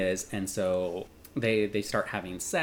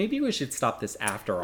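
ordinary talk

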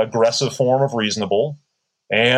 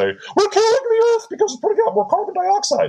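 very high, shrill, swooping comic put-on voice. Parodying protesters chaining themselves to Parliament, shrill comical voice. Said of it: "I'm saying that in a shrill, somewhat, you know, comical voice".

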